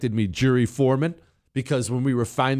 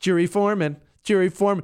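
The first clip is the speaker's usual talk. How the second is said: play-acted snide, snotty, mocking voice; 6 semitones higher than usual. Mimicking what she always says when he does that, imitating a snotty little voice. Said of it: "she always says in this snotty little voice".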